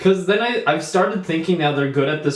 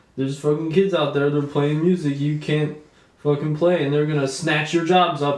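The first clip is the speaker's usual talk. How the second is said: ordinary delivery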